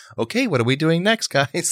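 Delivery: very high-pitched teacher voice. Retelling a group activity, quoting how Ashley spoke to the group: Ashley's teacher voice. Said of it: "She used her teacher voice a few times".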